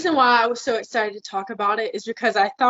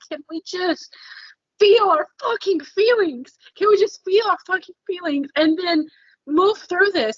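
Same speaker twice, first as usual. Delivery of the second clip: mock, high-pitched screaming outburst; 8 semitones higher than usual. Describing how everyone hurts each other: acting out own screaming. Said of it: "I'm just screaming, going".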